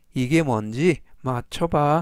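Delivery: ordinary delivery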